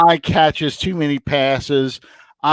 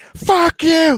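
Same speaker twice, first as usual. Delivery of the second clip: play-acted, shrill, very high screaming; 14 semitones higher than usual. A fan recounting a game he watched, retelling screaming at the tv. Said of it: "I'm screaming at the TV".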